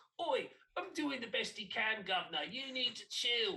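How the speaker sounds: put-on over-the-top Cockney accent, very high and loud. Quoting his reply to an annoyed question, in an exaggerated Cockney accent. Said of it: "that obnoxious, stereotypical, like, Cockney hooligan accent".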